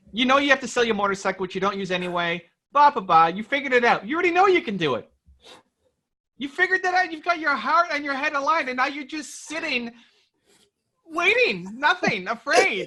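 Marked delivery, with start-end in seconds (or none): 3.2-12.8 squeaky, high, raised voice all the way through. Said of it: "voice is so squeaky right now".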